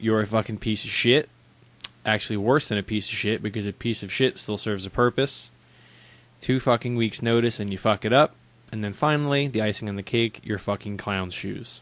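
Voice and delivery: normal talking voice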